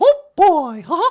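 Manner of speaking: squeaky-high cartoon mouse voice. Showing cartoon voices for an interviewer: Mickey Mouse voice. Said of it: "I could do a little Mickey Mouse".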